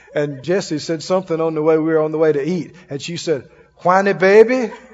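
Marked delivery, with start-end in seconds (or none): 3.7-4.7 convincing put-on Cajun accent. Retelling how a woman teased a man on the way to eat, good Cajun accent. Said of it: "In a good Cajun accent".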